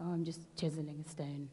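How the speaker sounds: put-on gloomy, glum, very quiet, low, hushed voice. Telling a story, the first stonemason answers a visitor: glum. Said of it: "the stonemason glumly looks up and says".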